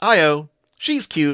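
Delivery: high, loud put-on girly feminine voice. Retelling what someone said on hearing Io's name, in a put-on feminine voice. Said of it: "says in um, a, a feminine voice".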